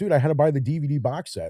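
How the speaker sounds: normal talking voice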